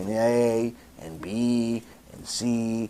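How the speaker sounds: very slow, very low, deliberate delivery. Speaker demonstrating how to explain something to listeners slowly, very slow. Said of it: "sometimes you tell them slowly".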